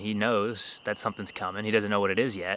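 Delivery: ordinary talk, nothing marked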